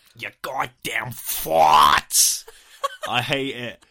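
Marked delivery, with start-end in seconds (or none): 0.2-2.5 loud, very slow ranting bellow, every word stretched. Quoting a rant from a film scene in its voice: imitating Robert Pattinson's delivery. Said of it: "That's how he says it".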